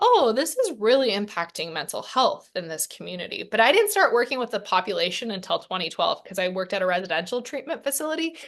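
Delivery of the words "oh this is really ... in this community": normal talking voice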